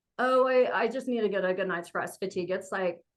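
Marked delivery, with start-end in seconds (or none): none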